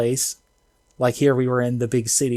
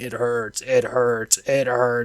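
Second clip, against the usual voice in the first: growly dog voice. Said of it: "like, growly dog voice".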